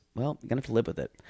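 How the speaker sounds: muttering under breath. Retelling what a man said about the mess, imitating a mutter under breath. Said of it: "kind of under his breath says".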